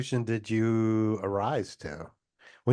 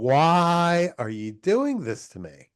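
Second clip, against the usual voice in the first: slow upward cry with drawn-out "why"; 3 semitones higher than usual. Imagining reacting to an accidental success: retelling shouting at the sky. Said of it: "shouting at the sky".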